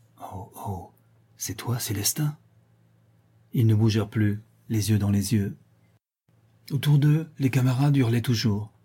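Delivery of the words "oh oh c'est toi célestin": barely audible, hushed, slow, horrified murmur. A woman realizes who the man before her is, murmuring very low in horror. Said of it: "elle murmura tout bas, presque dans sa bouche".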